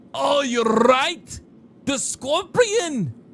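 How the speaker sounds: Irish lilt, pushed very high. Speaker addresses the guys, trying out an Irish accent. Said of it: "That's my Irish accent".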